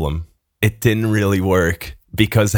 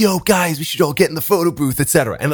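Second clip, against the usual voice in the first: fake drunk talk, higher pitch; 8 semitones higher than usual. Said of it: "I pretend that I'm more drunk than I'm actually in".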